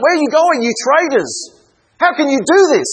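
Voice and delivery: angry, high, accusing cry.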